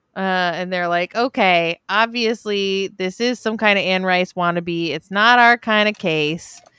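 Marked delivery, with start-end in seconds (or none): none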